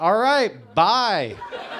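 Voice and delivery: high, loud, breezy, offhand dismissive delivery.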